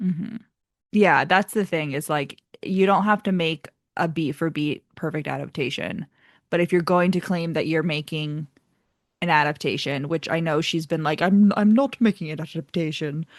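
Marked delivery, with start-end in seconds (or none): 11.2-13.3 bad, fake, put-on British accent. Quoting what she has said about her adaptation, in a horrible British accent. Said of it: "that was a horrible British accent".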